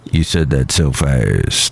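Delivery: grumpy, low, slow grumbling voice.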